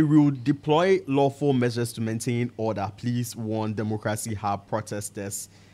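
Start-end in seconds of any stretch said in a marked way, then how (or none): none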